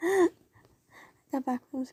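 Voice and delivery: soft, rushed mumble under the breath. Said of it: "I don't know why I'm mumbling".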